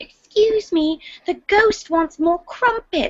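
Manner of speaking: put-on very high, tiny British girl voice. Describing how a girl sounds, imitating a BBC miniseries child: little British girl voice. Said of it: "she sounds like a little girl from a BBC miniseries".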